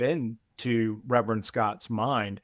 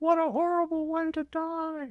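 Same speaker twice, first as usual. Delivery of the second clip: high-pitched, mild mock yell. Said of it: "the sister yells at him".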